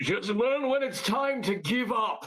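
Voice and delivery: big, loud bellowing call, sounding distant. Game master voicing Doran shouting at a player from afar, booming shout. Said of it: "gonna shout from wherever he's at with his booming voice".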